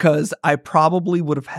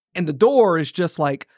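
normal talking voice

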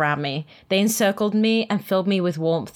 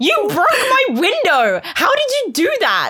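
very high, loud, shrill screech, wildly swooping; 14 semitones higher, 6 dB louder than usual. After he slams the car door and glass pours down, the narrator shrieks loudly. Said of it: "I shrieked so loudly".

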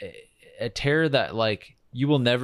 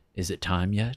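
mock ominous, menacing put-on priest voice; 2 semitones lower than usual. Retelling a temp job at a healthcare facility, speaker voices a priest: mock-ominous priest voice. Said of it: "this like ominous like priest that comes in".

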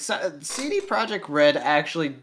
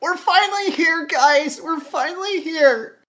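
very high-pitched, weary, totally over-it voice; 7 dB louder than usual. Describing the dialogue in Kingdom Hearts 3, mock-weary Sora impression. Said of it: "sounded like he was just ready to be done".

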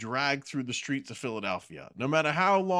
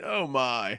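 put-on posh British woman's accent, higher; 7 semitones lower than usual. Telling an anecdote, a speaker repeats an older woman's disgusted remark about someone, in an imitated posh British accent. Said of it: "this semi pseudo British accent that this older woman had".

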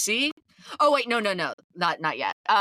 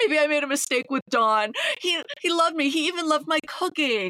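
put-on high, tearful, sobbing, pleading voice; 8 semitones higher than usual. Retelling a scene where Vicky spirals over the matching jackets: imitating Vicky crying. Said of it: "she can't stop crying and is like".

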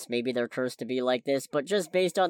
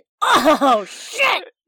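very loud, very high yell of fright; 11 dB louder than usual. Recounting their own reaction during a scary bit, retelling a shouted oh shit. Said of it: "I was shouting".

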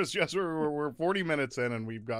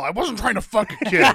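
very loud, high-pitched, full-throated yell; 10 semitones higher, 10 dB louder than usual. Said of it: "the louder you yell".

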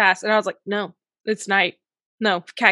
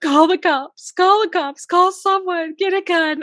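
high, tearful, frantic sobbing, panicked; 9 semitones higher, 3 dB louder than usual. Retelling a night when a shadow with a machete appeared: imitating her past panicked crying. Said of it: "I'm crying. I'm like".

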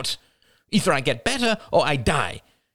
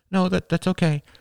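understated, easy, let slip out casually; 3 semitones higher than usual. Narrator reads the niece's reply to her apologizing aunt, murmured. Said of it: "murmured Rachel".

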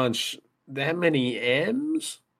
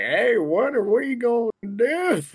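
put-on slight Southern accent, high and slow; 8 semitones higher, 3 dB louder than usual. Quoting the other person back to them: little Southern accent. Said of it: "you had like a little Southern accent".

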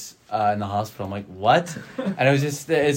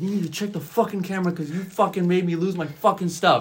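mock shouting, high-pitched; 7 semitones higher than usual. Retelling what a man at work said: imitating a man yelling. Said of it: "the dude is yelling at me".

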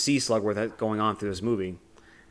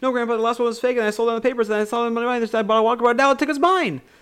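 very high, loud, auctioneer-fast breakneck babble; 13 semitones higher, 6 dB louder than usual. Retelling a scene where Charlie answers his grandpa; talking super fast. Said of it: "speaking as fast as he possibly can".

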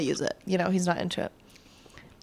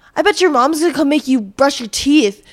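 higher, louder taunting tone. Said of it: "you're bullying a kid".

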